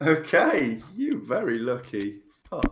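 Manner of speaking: openly disappointed, high and swooping tone. Mark reacting to another player's lucky roll, disappointed. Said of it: "You sound disappointed".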